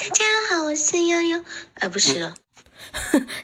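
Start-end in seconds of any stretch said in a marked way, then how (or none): 0.0-1.4 put-on cute little girl voice, higher pitch. Testing whether the speaker can talk in a very loli voice: cute little girl voice. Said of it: "我试一下我能不能用很萝莉的声音说话".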